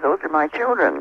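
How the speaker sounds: ordinary delivery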